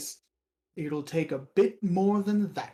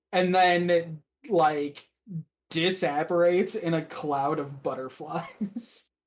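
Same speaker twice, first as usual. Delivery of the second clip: ordinary delivery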